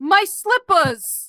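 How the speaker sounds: put-on high, highbrow New England accent. An actor repeats a take for the director, in a New England accent. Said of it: "a little more New England".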